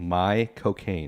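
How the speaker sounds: British accent, words run together. Showing how to say a name in a British accent: Michael Caine voice. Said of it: "say Michael Caine in a perfect British accent".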